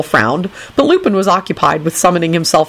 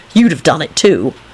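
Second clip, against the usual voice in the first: plain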